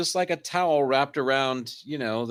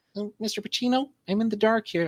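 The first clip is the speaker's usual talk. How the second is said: timid, deferential, meek voice, pitched up; 9 semitones higher than usual. Joking about a concierge making a wake-up call, meek timid concierge voice. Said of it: "the most meek concierge level people".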